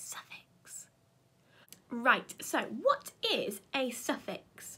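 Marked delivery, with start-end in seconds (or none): 0.0-0.9 very soft, breathy whisper, just breath. Showing children how to say a new word: whispering voice. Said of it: "Can you say it in a whispering voice".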